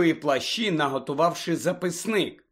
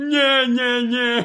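roaring guffaw, much higher and louder; 7 semitones higher, 6 dB louder than usual. Hagrid answers Parvati's worried interruption, guffawing. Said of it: "зареготав Гегрід".

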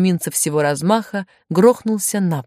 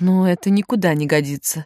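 ordinary delivery

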